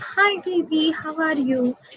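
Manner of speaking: very soft, hushed voice. Imitating how a certain boy likes to greet someone, in a very soft tone. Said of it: "he likes to talk like this".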